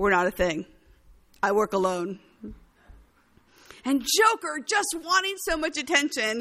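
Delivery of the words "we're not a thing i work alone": put-on curt, dismissive tone, lower and louder. Retelling a film scene, quoting a hero who brushes off a villain: imitating a curt shutdown. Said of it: "will just shut him down".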